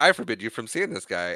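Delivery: acted-out angry tone, laying down the law. Retelling a scene between Rose and her mom, speaking as the mom, mock-angry mother. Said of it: "because she's angry".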